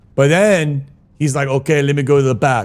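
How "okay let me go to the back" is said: put-on German accent. Retelling what a man said before bringing pills to the table, German accent. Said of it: "German accent".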